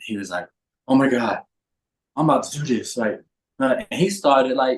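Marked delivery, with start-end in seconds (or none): 0.9-3.0 acted panicked, anxious voice near breaking. Retelling a phone call, imitating someone having an anxiety attack. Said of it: "having an anxiety attack on the phone".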